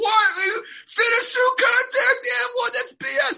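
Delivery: very high, shrill, loud screaming. Acting out own reaction to a missed foul call: imitating own screaming. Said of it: "I'm screaming like".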